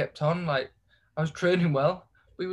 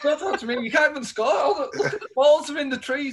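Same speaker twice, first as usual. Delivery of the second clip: put-on very high, loud, heated yelling; 10 semitones higher, 5 dB louder than usual. Retelling a football argument with another player, re-enacting his own shouting. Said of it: "I'm shouting".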